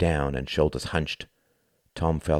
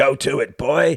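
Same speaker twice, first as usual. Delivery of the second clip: high, loud wheeze pushed out; 9 semitones higher, 7 dB louder than usual. Narrator reading a barman's words as he hands over a baseball bat, wheezing. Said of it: "he wheezed".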